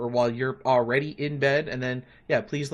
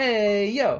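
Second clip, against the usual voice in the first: put-on high little two-year-old toddler voice; 8 semitones higher, 4 dB louder than usual. Retelling what the two-year-old says all day: imitating his two-year-old. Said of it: "He's like".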